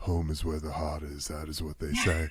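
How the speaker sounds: dropped low, British-sounding. Quoting a monster character's line from a childhood movie: Mr Hyde British accent. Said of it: "speaks with this, like, British accent".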